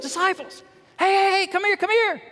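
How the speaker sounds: play-acted, very high, thrilled and excited voice. Retelling a Bible scene, Jesus calling the disciples: imitating an excited Jesus. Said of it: "He got excited".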